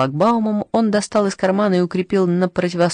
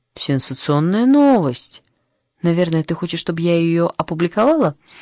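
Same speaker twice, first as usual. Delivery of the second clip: usual speaking voice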